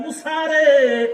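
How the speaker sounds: loud, high, drawn-out call.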